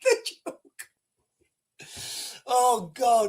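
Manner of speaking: giggling, laughing through the words. Reading out a username from forwarded emails, laughing while talking. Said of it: "I shouldn't be laughing".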